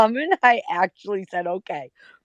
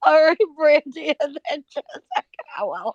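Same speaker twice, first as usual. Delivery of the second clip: talking through helpless giggles, pitched up; 7 semitones higher than usual. Trying to call on Brandy after cracking a joke, laughing while talking. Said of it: "but I can't stop laughing".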